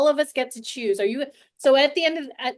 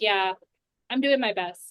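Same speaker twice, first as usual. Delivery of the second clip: calm, at ease and settled voice; 2 semitones lower than usual. Describing the voice behind a phrase, demonstrating it in a calm voice. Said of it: "The voice that comes out is a voice of calm".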